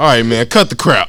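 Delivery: mock sudden serious tone. Retelling an interrogation, imitating a cop turning serious and tense. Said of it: "when they get all, like, serious out of nowhere and tense up".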